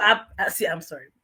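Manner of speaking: words broken up by laughter while talking. Apologizing for interrupting the other speaker's story, laughing while talking. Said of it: "the reason I'm laughing".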